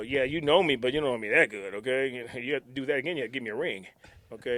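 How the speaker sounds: ordinary delivery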